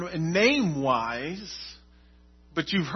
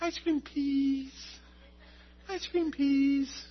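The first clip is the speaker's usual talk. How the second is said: put-on sweet, high-pitched, soft toddler voice. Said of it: "real sweet, elegant voice".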